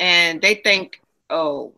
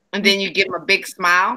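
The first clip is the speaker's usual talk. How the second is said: normal talking voice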